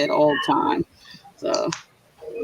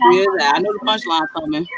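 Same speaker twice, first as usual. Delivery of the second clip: normal talking voice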